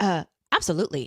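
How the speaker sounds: totally certain, confident, self-assured, unbothered tone. Retelling a character's answer to a doubtful question: imitating a confident reply. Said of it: "He was just so confident".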